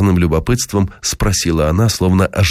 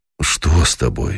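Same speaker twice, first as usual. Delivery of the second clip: low, anxious, caring tone of concern; 4 semitones lower, 3 dB quieter than usual. A woman asks Dima, who has followed her inside, with anxious concern. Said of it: "спросила она с тревожным участием".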